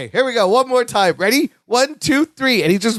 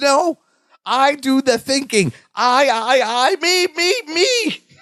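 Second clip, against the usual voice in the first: mock very slow, stretched-out, high yelling; 6 semitones higher than usual. Retelling a scene where Larry yells at Balki: imitating Larry yelling. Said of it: "He's just yelling at him".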